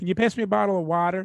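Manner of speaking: light put-on West Virginia twang. Retelling a daughter asking for water: imitating daughter's West Virginia accent. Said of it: "adapted a little bit of the way they speak".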